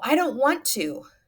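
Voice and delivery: high, loud yell. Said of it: "Someone's yelling".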